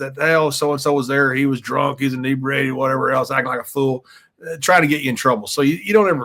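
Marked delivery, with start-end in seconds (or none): none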